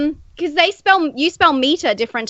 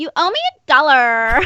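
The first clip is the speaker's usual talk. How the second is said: put-on valley girl speech style. Speaker shows how her husband says she says it, valley girl voice. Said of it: "like a valley girl, so just go".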